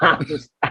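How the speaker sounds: quick, laughing delivery.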